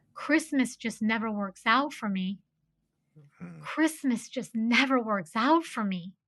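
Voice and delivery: play-acted, soft, downtrodden, dejected lament. Retelling what someone on a train kept saying: imitating a downtrodden, sad voice. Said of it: "in this really downtrodden, sad voice".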